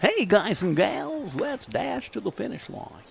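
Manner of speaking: put-on old-school radio announcer voice. Talking about a track dash, then using an old radio voice. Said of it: "It's my old radio voice".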